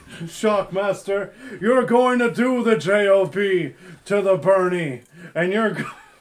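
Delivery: acted elderly politician voice. Doing a wrestling promo to Shockmaster as Bernie Sanders: Bernie Sanders impression. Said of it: "Jimmy Fallon doing an impression of Bernie Sanders".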